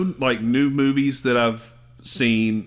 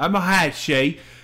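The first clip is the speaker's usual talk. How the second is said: attempted Australian accent; 4 semitones higher than usual. Trying out an Australian accent while joking about a name, Australian accent. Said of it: "my Australian accent".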